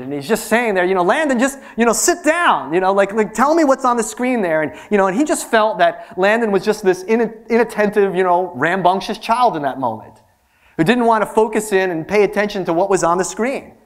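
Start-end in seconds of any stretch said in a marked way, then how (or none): 1.0-4.6 mock exasperated, irritated, pitched-up, impatient doctor voice. Retelling an eye doctor talking to a young child: imitating an irritated eye doctor. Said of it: "the ophthalmologist is just getting a little irritated".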